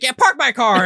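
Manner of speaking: smug, smarmy, very high-pitched, loud voice. Retelling a Steve Guttenberg movie scene, the speaker imitates a smarmy guy at the car place. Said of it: "he's some like schmarmy asshole".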